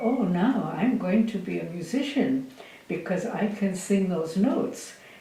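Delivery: ordinary talk, nothing marked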